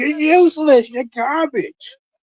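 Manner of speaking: mock yelling, very high, slow and drawn out. Retelling how a wrestler yelled at an injured opponent: imitating someone yelling. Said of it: "He just started yelling at him".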